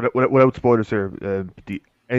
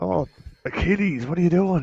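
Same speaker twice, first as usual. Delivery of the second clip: put-on high-pitched, hammed-up, over-the-top Irish accent; 8 semitones higher than usual. Mocking a game character's accent: Shay Cormac Irish accent. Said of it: "that's not a proper Irish accent".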